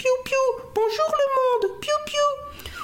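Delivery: tiny, very high peeping chick voice. Quoting a cartoon chick hatching from an egg, tiny chick voice. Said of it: "sa petite voix".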